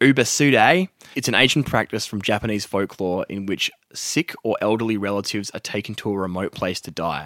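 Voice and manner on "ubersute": broad, exaggerated Australian accent laid on thick. Speaker repeating a term from the other speaker's story, in a broad aussie accent. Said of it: "Say it more Aussie".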